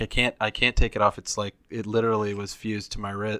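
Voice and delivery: ordinary talk, nothing marked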